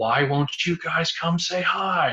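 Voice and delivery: put-on exasperated, drawn-out yell, high and rising. Retelling standing in the forest and yelling at them: retelling a yell. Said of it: "I stood there and I yelled in the forest".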